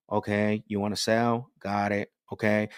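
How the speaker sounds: dull, even monotone delivery.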